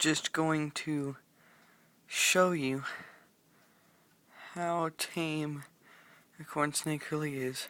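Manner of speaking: talking quietly and softly. Filming a snake video late at night so parents stay asleep: talking quietly. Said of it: "I'm having to talk pretty quiet".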